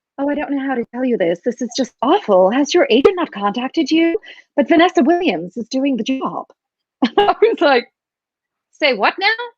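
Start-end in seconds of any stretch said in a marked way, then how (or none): 0.2-6.5 camp impression of a man. Retelling what a man said to the speaker, imitating a camp man. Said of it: "there was this very sort of camp man swanning around".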